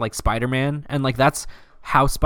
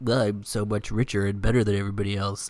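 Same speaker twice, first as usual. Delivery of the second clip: tossed-off, pompous and boastful tone; 4 semitones lower, 3 dB quieter than usual. Mocking how a pompous character would quip: Iron Man impression. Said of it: "would make sense for him to quip and be like".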